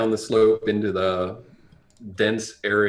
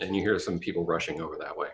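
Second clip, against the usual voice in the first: usual speaking voice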